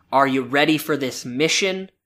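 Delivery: ordinary delivery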